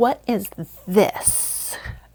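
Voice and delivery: put-on sassy, confrontational, snippy tone with attitude. Retelling how a staff member asked her a question: imitating someone asking with attitude. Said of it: "with, like, attitude".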